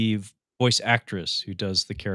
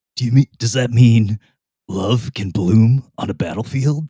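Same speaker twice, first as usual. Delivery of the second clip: very loud, belted video-game soldier voice; 9 dB louder than usual. Recounting a meeting where he dropped a quote from the games, Solid Snake voice. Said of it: "in the Solid Snake voice".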